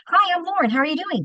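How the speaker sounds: very fast, rapid-fire, very high-pitched chatter. Speaker demonstrates her natural speed of talking: very fast talking. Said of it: "My natural speed of talking is".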